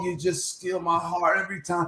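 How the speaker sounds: put-on scream. Retelling how a fan in the crowd was screaming: imitating a fan screaming. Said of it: "this fan that was up there just screaming like".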